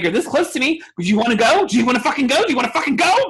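mock, very high, shrill, enraged yelling. Retelling threatening some people to their faces, retelling a scream. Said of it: "started screaming at them".

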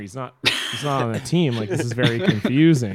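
normal talking voice

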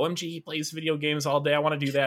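put-on high-pitched young child's voice. Reading a viewer's comment aloud, imitating a little kid. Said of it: "Just me trying to be a little kid".

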